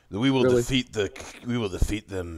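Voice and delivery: declared in a supervillain voice. Mocking online posters by imitating them: Doctor Doom voice. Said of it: "they sound like they're fucking Doctor Doom".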